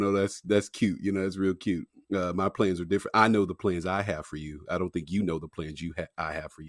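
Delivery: ordinary talk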